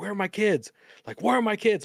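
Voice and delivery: high, angry, increasingly mad tone, acted out. Recounting waking strapped to a table, acting out getting mad about the kids. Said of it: "Like getting mad".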